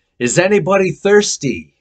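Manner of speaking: very loud, booming, high calling out. Speaker retelling how Jesus stood up in the crowd during a service, loud voice. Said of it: "he says in a loud voice".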